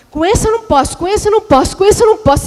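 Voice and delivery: fast, high, rapid shrieking demon scream. Recounting a demon screaming over a man tied to a bed: retelling a demon screaming. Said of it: "o demônio começou a gritar".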